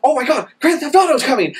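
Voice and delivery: acted-out, all-excited gush, high-pitched and fast. Blaming a friend for a game delay: imitating Chuck excited. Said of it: "he got me all excited".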